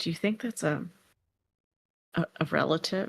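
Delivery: quiet, hushed, murmured under the breath. Voicing a character who gestures toward a creature and asks: speaking quietly. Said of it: "says quietly".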